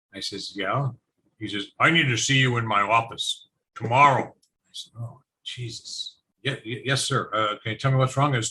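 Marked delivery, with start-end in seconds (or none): 1.8-4.2 put-on aged, old man voice. Retelling a phone call from the postmaster in Brantford, imitating the postmaster's voice. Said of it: "I'm going to try and do the voice".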